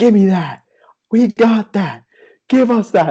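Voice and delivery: very high, shrill, frantic yelling. Retelling their outburst at the judges, retelling a yell. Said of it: "And I start yelling".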